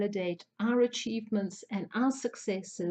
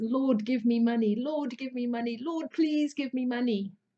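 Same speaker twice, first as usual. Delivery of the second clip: imploring, begging, pleading voice, repeated over and over; 3 semitones higher than usual. Acting out a saying about praying for money: imitating someone begging. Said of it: "Are you begging the universe for more".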